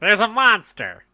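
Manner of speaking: loud, high-pitched character voice. Voicing Leek answering Rolo in an Urkel voice. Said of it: "my best, uh, you know, Urkel voice".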